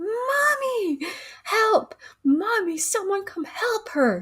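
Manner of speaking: put-on boy's high scream, word stretched long. Retelling a boy calling for help after his mom is shot: imitating a boy screaming for help. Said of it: "starts screaming, like".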